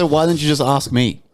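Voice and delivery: normal talking voice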